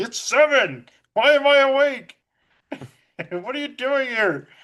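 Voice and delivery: offended, affronted, indignant outburst. Retelling a film scene where a woken character gets offended: imitating an offended outburst. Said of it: "He gets all offended".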